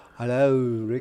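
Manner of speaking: put-on Liverpudlian accent. Imitating a friend as if he came from liverpool: liverpool accent. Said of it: "from where [name] came, Liverpool?".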